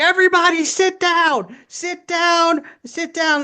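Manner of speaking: very high, drawn-out shrieking scream. Retelling how an older teacher screamed at students: imitating a teacher screaming. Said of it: "just screaming, like, at them".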